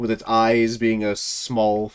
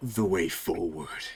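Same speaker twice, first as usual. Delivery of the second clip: eerie, sinister put-on voice, low and hushed; 5 semitones lower, 8 dB quieter than usual. Voicing a character who offers a mask as an invitation: creepy voice. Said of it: "I hate doing the creepy voice".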